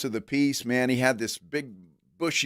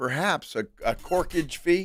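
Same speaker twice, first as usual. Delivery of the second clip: joking put-on Irish accent, pitched up; 5 semitones higher than usual. Talking about bringing alcohol to an event: put-on irish accent. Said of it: "Why did you say it that way?".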